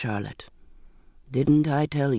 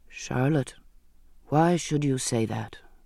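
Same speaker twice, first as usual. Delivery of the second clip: plain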